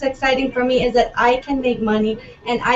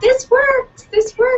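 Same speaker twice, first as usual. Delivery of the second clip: thrilled, very high-pitched, excited outburst; 12 semitones higher, 4 dB louder than usual. Recalling her first sale the morning after listing, retelling own excitement. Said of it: "And I was so excited".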